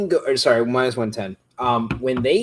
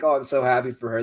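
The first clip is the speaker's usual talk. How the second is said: mock crying, words choked with tears. Retelling a reaction at a movie premiere, imitating Josh Allen in tears. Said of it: "he was in tears, and he was like".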